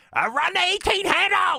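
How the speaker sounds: very high, shrill, rising screech. Speaker recalling a coach shouting which runs to call, imitating Alex Gibbs screaming. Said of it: "and he'd be screaming".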